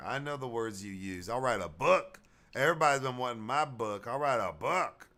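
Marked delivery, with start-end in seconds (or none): 1.3-4.9 female-sounding voice.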